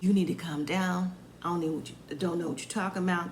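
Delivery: calm, low tone with a slight sarcastic edge. Retelling an argument, quoting Kevin to Kayla: imitating Kevin, calm and sarcastic. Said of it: "talking in a in a calm tone. It's still sarcastic a little bit".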